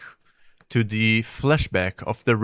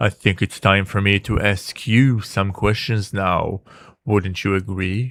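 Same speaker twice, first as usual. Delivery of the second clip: low, growling dragon voice; 2 semitones lower than usual. A dragon turning to question the listener, in a low dragon growl. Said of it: "The dragon's voice settled into a low growl".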